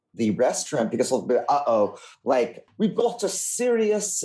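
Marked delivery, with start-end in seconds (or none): 1.4-4.2 bad put-on English accent, higher pitch. Imitating restaurant staff spotting a wine snob: bad English accent. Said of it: "they're gonna have a really bad English accent suddenly".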